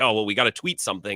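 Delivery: ordinary talk, nothing marked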